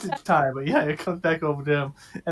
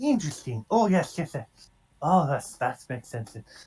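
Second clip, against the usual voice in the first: quiet, murmured, private-sounding muttering. Investigating a temple in character: muttering to himself. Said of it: "talking to himself as he is".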